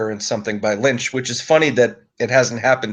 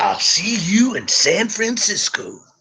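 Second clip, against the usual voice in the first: put-on slow, high, stretched-out American accent; 9 semitones higher than usual. Quoting a line in a James American impression. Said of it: "That's my best James American impression".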